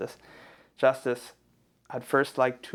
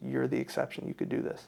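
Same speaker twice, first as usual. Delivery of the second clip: put-on whisper; 5 dB quieter than usual. Speaker recounts a woman encouraging him before his speech, imitating a whisper. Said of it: "She was like whispering".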